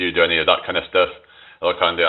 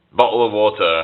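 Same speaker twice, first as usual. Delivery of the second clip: British-sounding accent and pronunciation; 3 semitones higher than usual. Saying a phrase the chat keeps asking for: British accent. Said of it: "obsessed with me saying bottle of water in, like, British accent".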